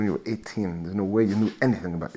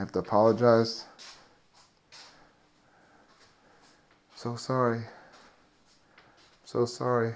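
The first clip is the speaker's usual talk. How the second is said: mock broken, defeated, beaten-down man's voice; 4 dB quieter than usual. Acting out a 50-year-old coffee-shop worker apologizing to a teenage customer: mock broken, defeated voice. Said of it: "My broken voice because he's broken".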